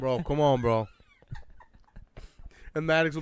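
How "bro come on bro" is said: put-on annoyed voice. Retelling how a friend reacts when others gang up on him: imitating Connor. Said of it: "He's like".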